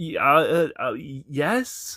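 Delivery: put-on nervous stutter. Recounting a job interview, answering the interviewer, retelling own nervous stuttering. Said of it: "I'm stuttering".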